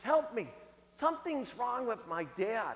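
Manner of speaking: hushed, frantic, panicked pleading voice. Telling a story, the neighbor's daughter at the door asks for help: retelling a panicked plea. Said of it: "in this panicked voice".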